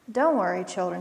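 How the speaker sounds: plain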